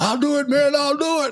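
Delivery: high, whiny, pleading tone.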